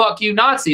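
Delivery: put-on shout. Retelling what was yelled at people walking away from a protest: imitating a yell. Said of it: "I yelled".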